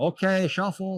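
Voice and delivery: high-pitched shouted yell. Retelling how the supervisor yelled back: imitating Lloyd yelling. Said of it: "Lloyd yells back".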